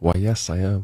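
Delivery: mock-seductive voice. Telling a joke, voicing a woman at a bar answering a man, put-on sexy voice. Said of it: "She replies in a sexy voice".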